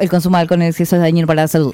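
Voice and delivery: gabbled, rattled off at top speed. Demonstrating how those warning messages were said, rushed, very fast. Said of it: "lo hacían muy rápido? Así como".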